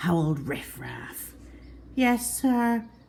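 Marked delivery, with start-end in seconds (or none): 1.9-2.8 tiny, shrunken little small voice. Reading a story, a boy caught copying answers the teacher in a small voice. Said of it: "said Simon Smee in a small voice".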